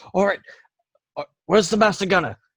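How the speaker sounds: high, fast voice calling out.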